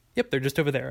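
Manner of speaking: plain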